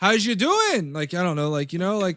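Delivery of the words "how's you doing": put-on pitched-up Canadian or Minnesota accent. Imitating another speaker's greeting: imitating a Canadian or Minnesota accent. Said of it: "sounds like a Canadian or a Minnesota".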